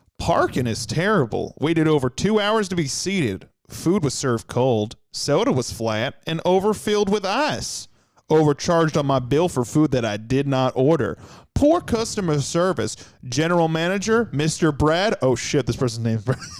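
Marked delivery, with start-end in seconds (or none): 0.2-15.2 put-on Southern American accent. After choosing Southern over Cajun, reading aloud in a Southern accent. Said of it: "We're gonna go with Southern".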